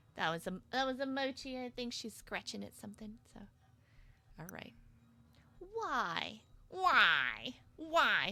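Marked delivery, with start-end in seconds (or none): 5.8-8.4 swooping cartoon voice, "why" stretched out. Reacting while playing a game: Linda from Bob's Burgers voice.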